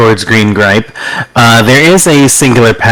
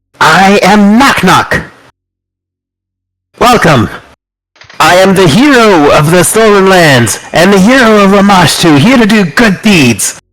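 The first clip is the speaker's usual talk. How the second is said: proud, heroic-sounding, higher-pitched, normal room volume; 8 semitones higher than usual. Narrator voices the goblin Knock Knock introducing himself, calling out at room level. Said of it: "in just a room-level speaking voice".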